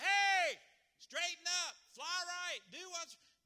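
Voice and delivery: high, loud, commanding shout.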